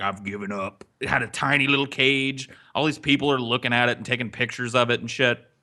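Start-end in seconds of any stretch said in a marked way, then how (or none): 0.0-0.8 lower, quieter and slower voice. Telling about a caged tiger, voicing it in a slightly lower voice. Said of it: "(slightly lower voiice)".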